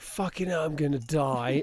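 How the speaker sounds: frantic, mildly panicked yell. Retelling a sudden kidney stone attack to a partner: imitating a scream. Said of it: "screaming at my partner".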